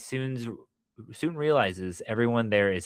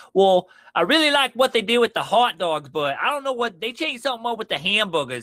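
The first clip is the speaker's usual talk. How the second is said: put-on very high, loud, laid-on-thick Boston accent; 10 semitones higher, 6 dB louder than usual. Retelling a stranger's phone call overheard on a walk: imitating a thick Boston accent. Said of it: "very thick Boston accent".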